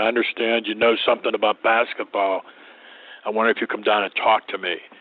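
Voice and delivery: rough, gravel-edged gravelly voice. Retelling a phone call from a man forming a basketball team: gravelly voice. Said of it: "in a gravelly voice".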